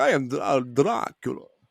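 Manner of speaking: very slow, stumbling, drawn-out character voice. Showing how the comic character was read: Dracula voice. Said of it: "that's how I read his".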